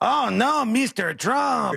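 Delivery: exaggerated cartoonish Spanish accent, high and slow.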